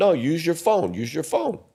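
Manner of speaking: put-on Polish accent. Retelling getting a woman's number, quoting her reply in a polish accent. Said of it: "That's a Polish accent".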